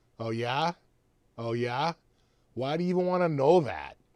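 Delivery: loud, high-pitched put-on Boston accent. Acting out an ai from boston answering a question, in a boston ai accent. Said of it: "That's Boston A I".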